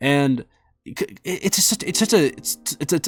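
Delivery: nervous stammering. Speaker talking about a touchy subject involving traumatic events, nervous stuttering. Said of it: "I'm stuttering, sorry, I get nervous talking about this".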